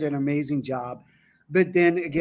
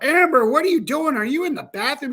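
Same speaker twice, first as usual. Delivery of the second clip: put-on very high, loud call yelled across; 11 semitones higher, 6 dB louder than usual. Retelling calling to a guest on the phone: imitating someone yelling out. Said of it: "yelling out".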